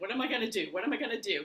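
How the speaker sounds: mock frantic, fast, panicked fretting. Retelling choking on food and walking off quickly, imitating own panic. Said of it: "I'm just in panic mode".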